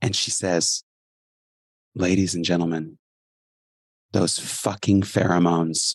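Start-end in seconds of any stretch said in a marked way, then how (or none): 1.9-5.9 quiet, soft speech. Retelling what a ninety-year-old woman said to everybody: imitating someone speaking quietly. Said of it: "And then she gets really quiet".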